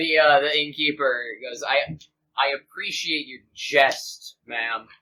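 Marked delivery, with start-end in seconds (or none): 1.6-4.8 expressionless, dead level, slow, flat deadpan. The innkeeper replies to a rude remark while staring straight at the speaker: deadpan. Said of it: "Just deadpan".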